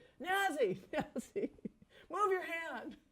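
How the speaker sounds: mock very high, loud booming holler. Retelling how a man shouted to Nazi on camera, loud booming shout. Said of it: "he's in a very loud, booming voice".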